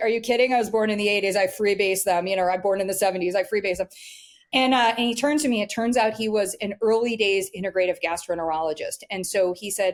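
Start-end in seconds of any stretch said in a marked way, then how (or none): none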